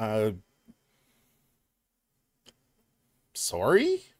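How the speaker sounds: put-on polite, apologetic sorry in Canadian accent. Retelling a Taco Bell mix-up, the speaker replays their own reply: retelling a Canadian-style apology. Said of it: "in my very Canadian way".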